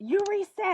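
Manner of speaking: all-out, high, furious screaming. Retelling an angry game character catching a reset: imitating someone screaming. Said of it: "He was, like, screaming at me".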